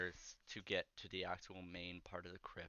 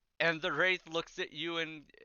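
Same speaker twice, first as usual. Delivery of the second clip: ordinary delivery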